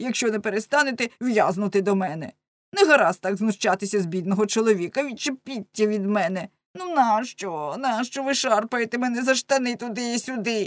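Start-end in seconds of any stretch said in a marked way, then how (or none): none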